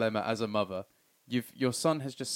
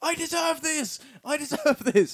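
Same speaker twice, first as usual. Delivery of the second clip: mock very high, loud, drawn-out howling scream; 5 dB louder than usual. Retelling a film character's punishments in hell: imitating a scream. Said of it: "he's just screaming".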